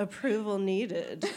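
put-on sarcastic automated checkout announcement voice. Imitating the co-op machine when scanning alcohol: imitating a sarcastic machine voice. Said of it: "It's like really sarky".

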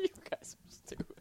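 high, breathy, laughing through the words.

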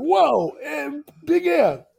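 put-on high, loud shout like a four-year-old.

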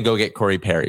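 normal talking voice

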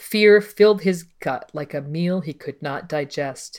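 normal talking voice

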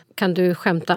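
plain

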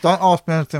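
muffled speech with a mouth full of food. A co-host eating a mince pie during the show, talking with mouth full. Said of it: "I'm eating a mince pie".

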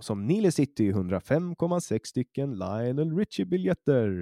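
put-on radio announcer voice. Showing how they talk when presenting the podcast: radio announcer voice. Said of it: "då får jag prata så här. Som i en radio".

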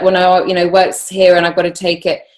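plain

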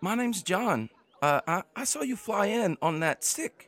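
put-on squeaky little boy voice. Narrating a game, voicing a very small halfling boy, in a squeaky little boy voice. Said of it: "talk in a little boy squeaky voice".

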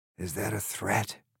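gruff, hushed, menacing growl. Narrator reads the creature answering Alice, growling. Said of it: "He growled".

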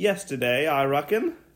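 festive, cheerful put-on British accent. In a Christmas skit, answering the other speaker's question as Mr. Claus: British-accented Mr. Claus. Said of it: "I really hope you drop the accent soon".

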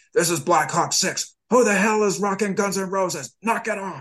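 very high, irate, angry radio commander voice. Speaker describes a commander's voice coming over the radio net, imitating an irate commander. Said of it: "Irate commander's voice coming over the net".

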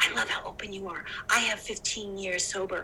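discreet, confiding, quiet, hushed murmur. Retelling what someone on set quietly told him, imitating a quiet aside. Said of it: "come over to me and say quietly".

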